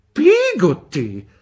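shrill, very loud, outraged and indignant tone. Narrator reads a woman repeating the servant's name the mother just gave; indignant. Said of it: "ripeté indignata Miss Betsy".

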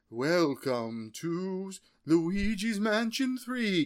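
put-on spooky narrator voice. Recalling a game presentation's narration, imitating a spooky narrator. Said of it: "I love the narrator's kinda spooky".

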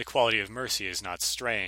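normal talking voice

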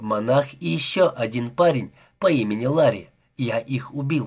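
ordinary delivery, nothing marked

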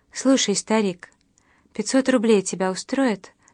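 plain reading voice

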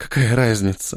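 hushed whisper. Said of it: "прошептала она".

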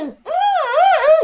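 high, strangled choking gasps.

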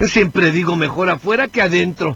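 animated ogre voice. Self-declared impressionist, asked whom he imitates, doing a Shrek impression. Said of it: "Ese es el Shrek de verdad".

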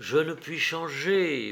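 murmuring. A woman answers the man who has come to see her, murmured.

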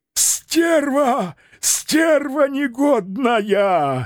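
shrieking rattling falsetto, Стерва drawn out. The apothecary, wiping burning liquid from his face, cries out in a shrieking rattling falsetto. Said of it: "дребезжащим фальцетом завизжал аптекарь".

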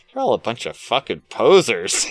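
swooping, animated, insulting punk-style put-down tone. Retelling a comic scene where a punk rocker mocks posers: imitating a character talking trash. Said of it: "just talking shit to him".

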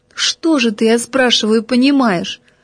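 usual speaking voice

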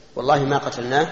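normal talking voice

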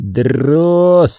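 contemptuous, scornful, disdainful, with stretched, rolled r. Reading a man's retort to the sergeant, contemptuous, drawing out the R. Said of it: "с пренебрежением сказал Синченко".

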